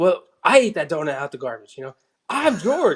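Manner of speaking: high, put-on exasperated, fed-up yell. Retelling a TV reunion scene where he yells at Elaine: imitating Larry David yelling. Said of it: "so he starts yelling at Elaine".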